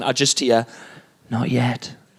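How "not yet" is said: put-on creepy, eerie toddler voice, lower pitch. Retelling words heard over the baby monitor at night: imitating a creepy toddler. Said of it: "this is the creepiest one".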